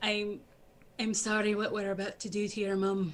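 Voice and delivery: very soft, gentle, hushed, barely-there voice. Voicing a character apologizing to a creature before attacking its mother: very softly. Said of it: "I'm going to say very softly".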